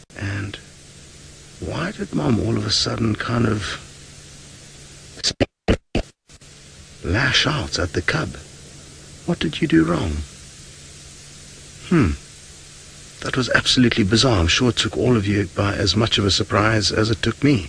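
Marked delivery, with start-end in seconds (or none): 0.2-14.4 soft, hushed, breathy whisper. Filming very close by an animal mother and her cub, whispering. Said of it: "so that's why I'm whispering".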